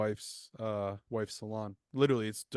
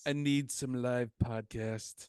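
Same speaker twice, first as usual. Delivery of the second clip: put-on blustery politician voice; 2 semitones higher than usual. Repeating a line after being told it sounded like Trump: Trump voice. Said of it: "Why'd you sound like Trump there?".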